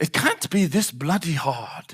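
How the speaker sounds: best-attempt put-on English accent, soft and slow. A speaker quoting someone's remark to an audience, in an attempted English accent. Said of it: "That's the best I can do at an English accent".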